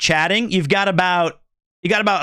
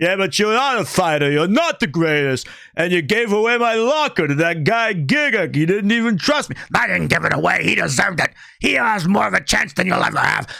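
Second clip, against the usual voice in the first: put-on raspy voice. Imitating how a trainer character talks: imitating a raspy voice. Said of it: "he has a raspy voice like this".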